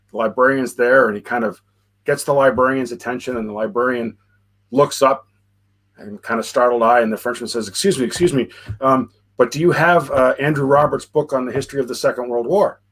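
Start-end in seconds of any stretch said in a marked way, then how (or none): none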